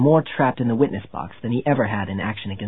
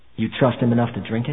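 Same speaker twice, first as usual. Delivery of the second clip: ordinary delivery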